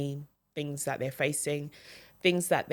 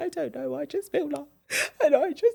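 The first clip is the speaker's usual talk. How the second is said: very high, weepy, sobbing, tearful crying voice; 12 semitones higher, 4 dB louder than usual. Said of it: "and I'm crying".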